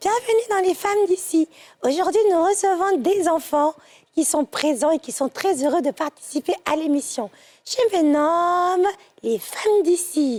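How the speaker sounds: put-on childlike girl's way of talking. Christmas show host voicing their teddy bear welcoming children, little girl voice. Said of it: "je vais prendre une voix de petite fille".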